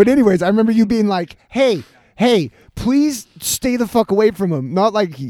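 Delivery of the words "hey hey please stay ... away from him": play-acted earnest, pleading, begging tone. Retelling how another speaker warned them to stay away: imitating someone pleading. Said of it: "but more like pleading".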